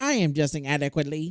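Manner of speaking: robotic, machine-like speech. Acting out a comic character answering from a new robot body: Myers robot voice. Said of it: "His little robot body".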